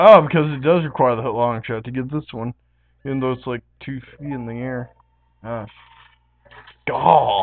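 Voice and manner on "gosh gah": put-on frustrated cartoon voice, blurted. Exclaiming while playing a game: Randy Marsh voice. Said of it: "trying to sound like Randy Marsh from South Park".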